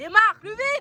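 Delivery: urgent, high-pitched yell. Urging the driver to start the car faster, shouting. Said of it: "arrête de crier".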